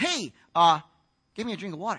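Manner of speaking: plain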